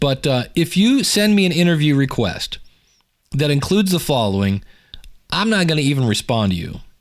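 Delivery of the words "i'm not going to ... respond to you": ordinary talk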